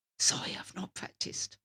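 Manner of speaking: put-on whispering in a child's voice. Retelling how pupils confess at a lesson: imitating a kid whispering. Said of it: "and whisper to me".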